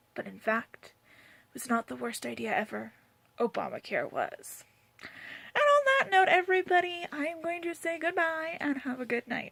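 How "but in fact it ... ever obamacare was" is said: rough, creaky narrating voice. Voicing a line spoken over the complaints in the background: Morgan Freeman voice. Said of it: "Morgan Freeman's voice speaks out and says".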